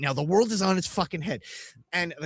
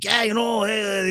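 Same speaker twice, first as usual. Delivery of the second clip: put-on laid-on New York accent; 6 semitones higher than usual.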